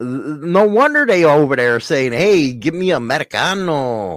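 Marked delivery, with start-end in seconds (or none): 2.1-4.2 slow, fake, put-on Italian accent. Mimicking someone's order, in a put-on accent sounding Italian. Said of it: "Why'd you just sound Italian".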